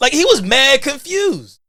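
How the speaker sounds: excited, amazed, high, loud, slow.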